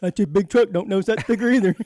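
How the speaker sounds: loud, silly, deliberately dumb put-on voice. Imitating a driver who doesn't notice a truck's warning sticker: put-on dumb voice. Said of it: "I like my dumb voice".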